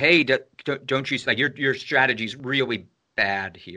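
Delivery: ordinary delivery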